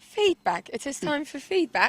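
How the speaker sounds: American speaker's fake English accent. Asked how he would say a word, showing the others an American's English accent impression. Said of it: "You sound like an American doing an impression of an English person".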